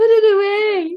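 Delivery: high, loud mock British angel voice. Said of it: "In her British voice".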